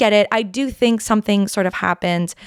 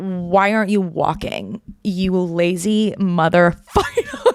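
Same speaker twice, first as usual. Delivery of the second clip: slow, fatherly scolding voice. Retelling how dad answered a request for a lift: imitating dad scolding. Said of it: "he would go".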